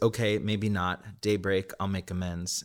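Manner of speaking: ordinary delivery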